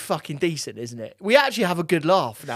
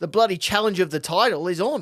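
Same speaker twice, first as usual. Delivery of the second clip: put-on Australian accent throughout. Hyping an upcoming game to the co-host on a podcast, fake Australian accent. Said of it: "I'm going to do the rest of the podcast in Aussie".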